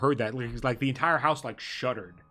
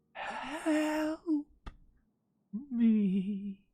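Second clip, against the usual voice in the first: faint, windblown whisper, pitched much higher; 14 semitones higher than usual. Narrating a game as the whole house shudders, voice a whisper on the wind. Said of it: "hear like a whisper on the wind".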